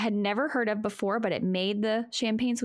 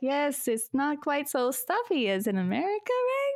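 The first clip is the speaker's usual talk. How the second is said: bad put-on Austrian accent, high, swooping sing-song; 5 semitones higher than usual. Recounting a chat with Sandra, who puts an arm around the speaker: Sandra in terrible Austrian accent. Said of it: "That's my terrible Austrian accent".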